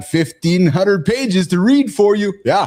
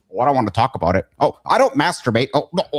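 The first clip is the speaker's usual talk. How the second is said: silly, goofy, mocking little voice, pitched low; 6 semitones lower than usual. Speaker acts out what other people say, talking to John, goofy little voice. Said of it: "that little goofy little voice there".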